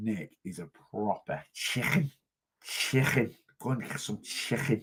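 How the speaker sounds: put-on Liverpool Scouse accent. Reading out a viewer's comment, then joking back: put-on scouse accent. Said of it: "it's the only thing I can do is Scouse".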